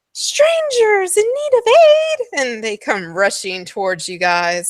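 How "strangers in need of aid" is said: gasping, very high, loud, eager excited cry. Voicing villagers who spot strangers: gasping excited cry.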